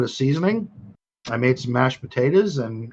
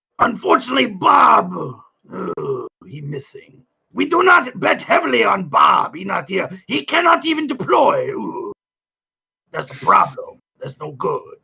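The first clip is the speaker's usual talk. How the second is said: put-on drunk character voice, higher; 6 semitones higher than usual. Playing a drunk character complaining about a cantina: drunk Watto voice. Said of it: "That was drunk, unfiltered Watto".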